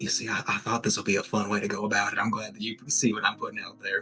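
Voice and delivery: whispered softly. Game narrator voicing a character who whispers into the player's ear: whispering. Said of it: "He whispers into your ear".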